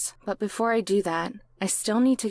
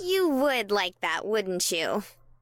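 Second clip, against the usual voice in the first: playful, mock-offended, put-on huffy teasing tone. She throws a mock slap after his hiking suggestion, in a huffy voice. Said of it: "fanning a huffy voice".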